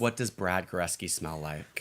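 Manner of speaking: ordinary talk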